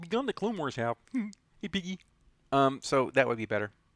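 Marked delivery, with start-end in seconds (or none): 0.0-2.0 high-pitched frog puppet voice. Trying the line again, in a Kermit the Frog voice. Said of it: "I should just say it like Kermit".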